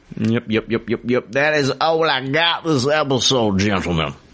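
full cartoon rooster character voice. Wrapping up the episode for the others: Foghorn Leghorn voice. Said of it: "I turned into Foghorn Leghorn".

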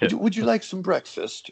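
poor put-on British accent. Retelling a 4 a.m. wake-up phone call, in a horrible british accent. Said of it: "with a horrible British accent".

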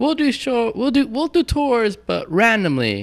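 put-on high, slow mock voice. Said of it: "you're gonna see Anthrax saying".

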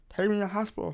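mock slurred speech. Retelling asking to go to hospital with a swollen tongue, imitating swollen-tongue slurred speech. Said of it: "literally sounded like that".

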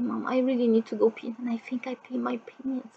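barely audible, very quiet, soft and urgent delivery. Retelling asking mom to use the bathroom: retelling saying it very quietly. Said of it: "very quiet".

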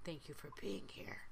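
quiet, low whisper.

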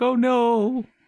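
mock tearful, very high, sobbing cry. Retelling how a crying character from the show reacted: imitating someone crying. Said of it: "she's all crying".

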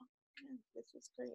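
emotionless, very hushed, rushed, flat deadpan monotone. Mimicking how someone sounds when excited, imitating someone flat, unexcited. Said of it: "It's not excited. There's no emotion".

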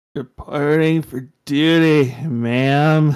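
loud slurred words, drawn-out "ma'am". Narrator reads a student's line as he tries to salute, slurring. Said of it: "he slurred".

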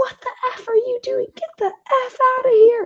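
play-acted, shrill, very high, top-of-the-lungs shriek. Speaker retelling knocking on the first door, imitating a woman screaming. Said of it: "woman screams at the top of her lungs".

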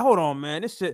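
normal talking voice

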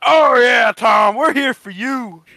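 very loud, high drawn-out yell. Retelling a movie screening, the speaker mimics a man screaming from the crowd: imitating a screaming redneck. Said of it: "this redneck guy".

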